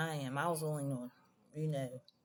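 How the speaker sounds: normal talking voice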